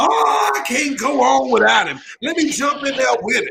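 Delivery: put-on, insincere, fake wailing. Imitating a mourner at a funeral faking grief: imitating fake mourner's wailing. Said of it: "They faking it".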